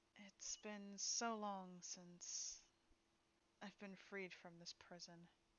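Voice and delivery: very soft-spoken, hushed murmur. Telling a scene to listeners, voicing a voice inside their head, very soft. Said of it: "You hear a very soft voice in your head".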